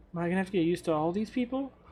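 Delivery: muttered under breath. Voicing a character as the group walks past him: muttered under his breath. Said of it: "just under his breath".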